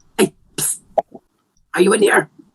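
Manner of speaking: high-pitched shouted whisper, yelled under the breath. Calling out to find someone who may be in the room, yell whisper. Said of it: "A yell whisper".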